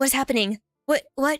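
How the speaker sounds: nervous, anxious voice. Demonstrating the different expressions they can change to, sounding nervous. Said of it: "I'm nervous".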